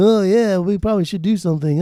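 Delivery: fake Australian accent. Imitating a band's attitude toward making a new record: put-on Aussie accent. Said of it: "that was my Aussie accent".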